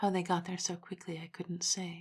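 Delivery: ordinary delivery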